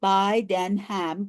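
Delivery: slow, deliberate, syllable-by-syllable, beat-by-beat delivery. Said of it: "that's three syllables".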